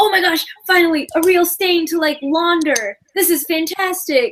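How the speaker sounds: high, overjoyed, delighted gushing. Acting out someone excited about cleaning a stain: imitating someone excited. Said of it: "excited about cleaning a stain".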